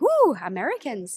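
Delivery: delighted high whoop. Speaker imitates locals reacting to finding out they're american, imitating excited cheering. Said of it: "They're very excited".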